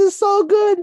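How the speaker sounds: acted sobbing voice. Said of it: "She's sobbing, like, actively sobbing".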